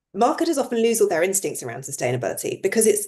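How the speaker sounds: normal talking voice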